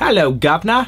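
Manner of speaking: bad fake British accent. Asked to do a British accent, answering in a bad exaggerated British accent. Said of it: "That was a bad British".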